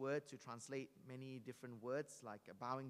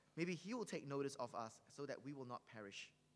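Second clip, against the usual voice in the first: ordinary talk, nothing marked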